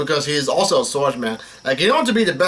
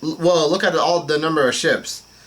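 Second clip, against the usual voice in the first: ordinary talk, nothing marked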